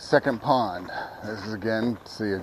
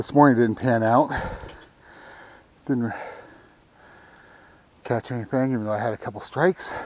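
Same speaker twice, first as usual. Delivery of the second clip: winded, out of breath; 3 semitones higher than usual. Fishing on camera and talking to viewers, out of breath. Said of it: "now I'm out of breath".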